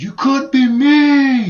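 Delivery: very loud, very high, very slow scream, "me" held. Retelling what a man lying on the sidewalk screamed at passersby: retelling a scream. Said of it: "he screams out".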